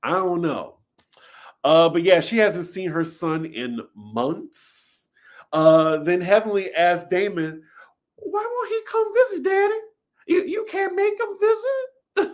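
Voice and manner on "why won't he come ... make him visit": squeaked out at very high pitch. Retelling a child questioning her dad; Mickey Mouse voice. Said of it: "In this Mickey Mouse voice".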